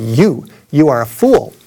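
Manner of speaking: play-acted, drawn-out, slow, deliberate preacher-style proclamation. Retelling a man with a loudspeaker answering his shout, imitating a booming voice. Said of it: "he said with a booming voice".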